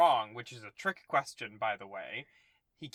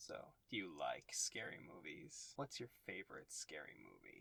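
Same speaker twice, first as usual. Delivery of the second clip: whispered, distorted voice-changer voice; 9 semitones lower, 17 dB quieter than usual. Asked to do the voice-changer caller's voice: Ghostface voice. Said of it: "do the voice?".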